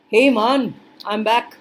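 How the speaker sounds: best-effort Caribbean accent, slow and drawn out. Coming back to the conversation, attempted caribbean accent. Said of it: "the closest I can get to to a, a Caribbean accent".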